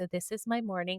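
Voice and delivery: calm, gentle, soft and soothing ASMR-style voice. Describing Instagram reels of calming moms, imitating a calm mom reel voice. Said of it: "they always talk like this".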